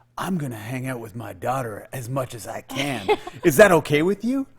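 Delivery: mock anger seething under forced, fake politeness. Retelling what the listener said after leaving the bathroom, in mock angry fake kindness. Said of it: "super like angry but trying to pretend you're being kind way".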